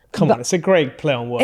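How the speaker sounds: ordinary talk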